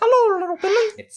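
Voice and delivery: squeaky, very high-pitched voice. Playing a mom who is Mickey Mouse, greeting a child: Mickey Mouse voice. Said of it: "my mother is actually Mickey Mouse".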